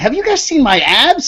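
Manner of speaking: mock high-pitched speech through laughter. Retelling walking up to a group at the bar, acting out talking while laughing. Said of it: "but I would do it laughing".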